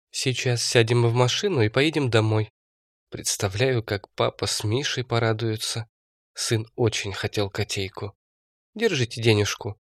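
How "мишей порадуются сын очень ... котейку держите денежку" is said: ordinary delivery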